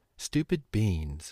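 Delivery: low, mumbled mutter. Sent to his room, sitting on his bed, a boy mutters to himself, muttered. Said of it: "he muttered".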